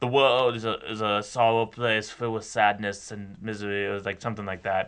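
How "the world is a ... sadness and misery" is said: put-on slow, unhurried, drawn-out German-accented English. Describing how a filmmaker always sounds: Werner Herzog impression. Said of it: "but in a German accent".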